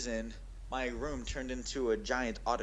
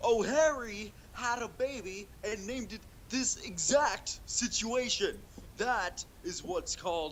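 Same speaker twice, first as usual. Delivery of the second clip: very high-pitched, cartoonish dad character voice; 9 semitones higher, 3 dB louder than usual. Trying to quote a line in the voice of Bob from Bob's Burgers. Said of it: "I can do an all right impression".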